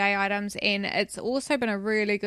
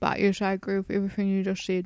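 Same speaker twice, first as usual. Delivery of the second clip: speaking with mouth full while eating. Still eating while agreeing with the other host, talking while eating. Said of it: "I'm still eating".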